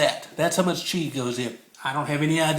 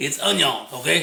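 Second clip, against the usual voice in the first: light put-on Cajun accent. Adding onion to the mixing bowl while cooking, in a little Cajun accent. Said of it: "My little Cajun accent there".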